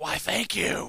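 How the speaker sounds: whispered, breathy masked-vigilante superhero voice. Thanking another speaker for a remark about the voice: Batman voice. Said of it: "Now you sound like Batman".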